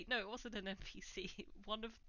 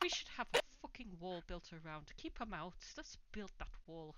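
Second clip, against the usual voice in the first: quiet muttering under breath. Voicing a character stomping away: muttering under his breath. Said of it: "you can just hear him muttering under his breath".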